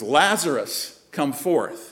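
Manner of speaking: loud calling voice. Speaker retells him calling Lazarus out of the cave, retelling a loud call. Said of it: "also in a loud voice".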